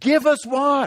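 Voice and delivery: blunt, insistent tone. Teaching scripture, the speaker acts out the people demanding from Moses: acting out a demand. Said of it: "They're now demanding from Moses".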